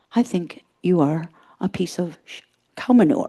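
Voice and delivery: sweet, gentle, affectionate and loving delivery. Speaking about communication, the speaker demonstrates a line in a very soft, loving tone. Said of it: "in a very soft, loving tone".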